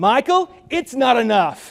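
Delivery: put-on Californian accent, high and loud. Retelling how a man pushes a napkin back across the table and answers, in his best californian accent. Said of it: "says in his best Californian accent".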